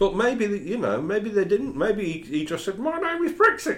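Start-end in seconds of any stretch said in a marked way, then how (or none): 2.8-3.8 imitated cockatoo voice, much higher and slower. Guessing what the cockatoo in Brighton said to its owners, in a cockatoo voice. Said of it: "in a cockatoo voice".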